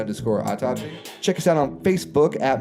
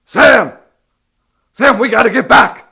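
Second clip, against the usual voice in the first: frantic scientist voice, much higher, louder; 11 semitones higher, 12 dB louder than usual. Doing a bit while the other speaker questions it, in a Doc Brown voice. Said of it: "are you doing like a Doc Brown bit now?".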